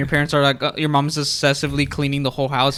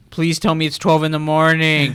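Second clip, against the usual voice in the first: usual speaking voice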